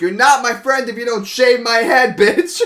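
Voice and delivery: very high, shrill, loud shrieking scream. Retelling urging friends to shave their head: imitating own screaming. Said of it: "I'm screaming".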